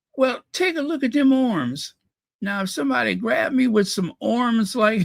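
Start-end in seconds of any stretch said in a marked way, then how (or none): 0.2-2.0 put-on Southern US accent, pitched way up. Showing how people down south say it, in a southern accent. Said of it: "that's how they say it down south".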